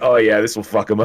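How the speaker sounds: usual speaking voice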